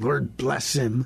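spoken through clenched, gritted teeth. Telling Gene how to begin praying for someone, through clenched teeth. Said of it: "you may have to pray through clenched teeth".

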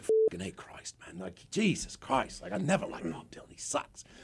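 breathy, half-whispered, muttered rock-star speech. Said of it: "this is how [name] talks".

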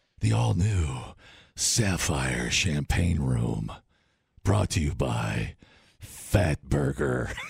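deep commercial radio announcer voice. Speaker mocks up a Vegas radio commercial, radio commercial voice. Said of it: "the radio voice".

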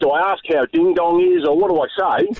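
ordinary delivery

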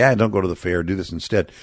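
normal talking voice

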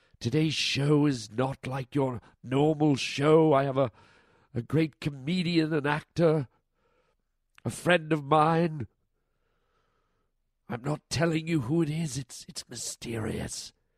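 deep, dark, mysterious hushed whisper. A show host teasing a secret special guest, in a deep, mysterious whisper. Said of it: "So I'm doing a mysterious voice".

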